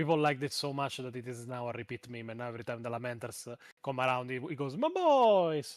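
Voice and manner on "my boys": very loud, very high fake Italian accent, boys held long. Retelling what another person says whenever the Lamenters come up: put-on Italian accent. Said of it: "like in an Italian accent".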